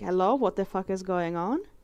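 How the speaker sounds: plain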